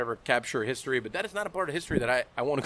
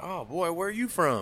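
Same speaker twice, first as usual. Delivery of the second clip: put-on small-town Virginia country accent; 4 semitones higher than usual. Retelling what locals in Virginia asked: imitating slow Virginia speech. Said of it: "very slow".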